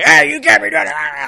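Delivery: cranky, very high, creaky and rough yell. Speaker imitates a grumpy chemistry teacher yelling at kids in the quad, imitating a grumpy teacher's yell. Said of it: "he would like literally yell at kids".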